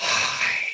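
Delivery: extended, drawn-out whisper pushed out loudly. Showing a class how to make the exercise sound: extended loud whisper. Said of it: "almost like you're whispering it, but loudly".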